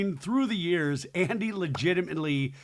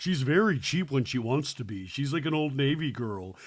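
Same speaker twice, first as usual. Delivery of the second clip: ordinary talk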